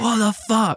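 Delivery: play-acted very high-pitched, shrill full shout. Speaker recalls shouting at a dog, retelling a shout. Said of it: "literally shouting at the thing like".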